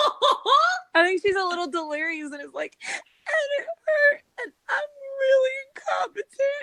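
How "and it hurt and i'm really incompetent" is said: bawling, loud crying. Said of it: "she's just bawling".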